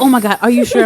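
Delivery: loud, flustered, full-panic outburst. Retelling how he panicked about what day it was: imitating someone panicking. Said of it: "He started panicking".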